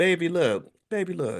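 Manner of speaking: put-on sweet baby voice, high, slow and drawn out. Imitating how Tabitha Brown might say her statement: Tabitha Brown sweet baby voice. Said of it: "in her sweet baby voice".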